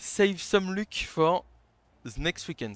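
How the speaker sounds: put-on speaking with English accent. Quoting what a man told him, in an english accent. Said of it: "J'espère que vous aurez apprécié mon accent anglais".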